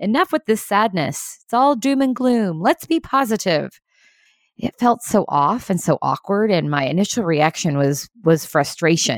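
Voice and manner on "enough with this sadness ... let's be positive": loud, high voice, piping up. Recounting a meeting, the speaker quotes another leader who piped up loudly. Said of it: "piped up in a loud voice".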